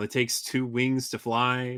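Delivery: ordinary talk, nothing marked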